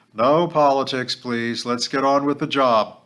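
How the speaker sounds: listless, bored, uninterested voice. A sergeant drawing his sidearm stops a scuffle in the crowd, bored. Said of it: "said in a bored voice".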